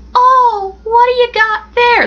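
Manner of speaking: very high, slow, horrible put-on old lady voice. Retelling a story about being spotted with my fly: put-on old lady voice. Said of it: "That's a horrible old lady voice".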